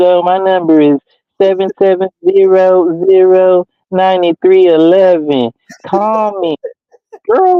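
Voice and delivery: sweet, slow, very cute put-on flirty voice. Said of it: "giving him your number all hella cute".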